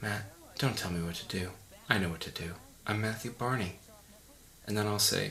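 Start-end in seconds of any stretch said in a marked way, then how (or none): none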